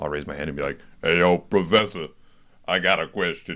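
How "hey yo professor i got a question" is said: bold, raised, deliberate public voice. Retelling how they ask a professor a question: imitating own deeper public voice. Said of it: "it's just always deeper in a public environment".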